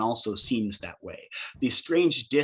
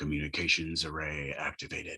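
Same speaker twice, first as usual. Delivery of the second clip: strangely deep, very low ship's computer voice; 8 semitones lower, 8 dB quieter than usual. Voicing a ship computer answering a call request: strangely deep computer voice. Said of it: "strangely deep computer voice".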